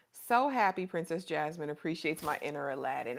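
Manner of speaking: plain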